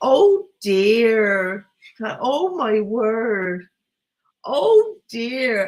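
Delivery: put-on very slow, drawn-out West Country accent and drawl. Retelling what a friend kept saying all the way through, in Kelly's West Country accent. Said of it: "Kelly in a West Country accent going".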